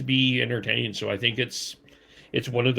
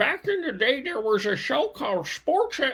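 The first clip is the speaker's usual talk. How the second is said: put-on, very high, swooping old man voice. Speaker announces an old man voice, then tells the rest that way: old man voice. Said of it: "I'm going to use my old man voice maybe here".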